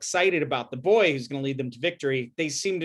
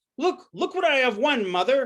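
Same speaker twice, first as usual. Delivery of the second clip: mock very high, thrilled, excited showing-off tone; 11 semitones higher than usual. Retelling how Arjuna shows his mother what he won: imitating an excited boast. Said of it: "and he's so excited".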